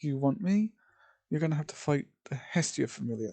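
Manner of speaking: ordinary delivery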